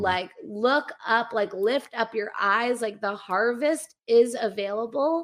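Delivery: ordinary talk, nothing marked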